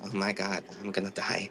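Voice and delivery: very low, slow murmur under the breath. Playing a character who learns who her lawyer is: murmuring. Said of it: "she kinda murmurs".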